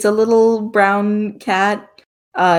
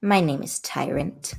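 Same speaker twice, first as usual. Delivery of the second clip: rough, low, creaky talking-cat character voice; 5 semitones lower, 9 dB quieter than usual. Answering a player who asks the cat's name, voicing a talking cat. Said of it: ""What's your name, honey?"".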